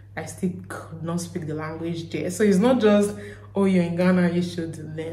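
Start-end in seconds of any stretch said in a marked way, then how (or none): none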